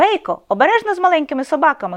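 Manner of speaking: high, loud called-out delivery. A dog's owner calls out to her dog Feya, calling out. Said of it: "гукнула".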